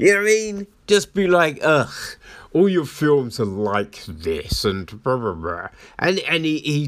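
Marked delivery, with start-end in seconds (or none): 1.6-5.7 put-on snarky, condescending tone with superior disdain. Retelling a film critic ripping into a director: imitating Joel's condescending tone. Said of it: "ripping into this director in this really condescending fashion".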